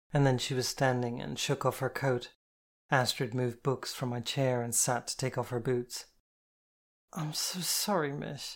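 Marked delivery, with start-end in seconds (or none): 7.1-8.5 drowsy, worn-out, hazy, slow and tired. Reading a story, the narrator repeats her apology to the woman: hazy and tired. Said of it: "hazy and tired".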